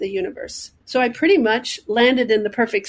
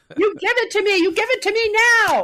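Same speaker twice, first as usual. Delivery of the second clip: put-on screaming, higher; 12 semitones higher than usual. Retelling hanging up the phone after losing a job: retelling a scream. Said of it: "just screaming out to something".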